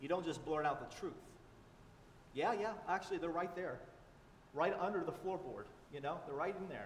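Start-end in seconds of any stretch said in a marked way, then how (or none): none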